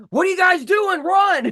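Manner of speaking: full, very high-pitched drill-instructor holler. Speaker recalls a chaotic stage moment, imitating Mike's drill-instructor yell. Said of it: "Mike is going like full drill instructor".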